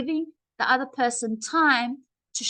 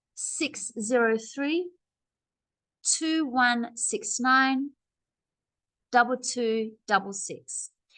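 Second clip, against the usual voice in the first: slow delivery, break after each set of digits. Repeating an English phone number back, with pauses between digit groups. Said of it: "I had a space in the writing and a pause in my voice".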